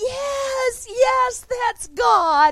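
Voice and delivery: very loud, very high, slow shriek, "yes" stretched. Retelling a woman's reaction after a man smashed a piece of pottery, retelling her screaming. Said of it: "She starts screaming".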